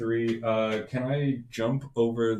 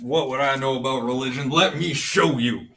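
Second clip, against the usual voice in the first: loud, raised shout, yelling; 2 semitones higher, 5 dB louder than usual. Player's character shouts after someone who runs away, shouting. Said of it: "I'm just basically shouting".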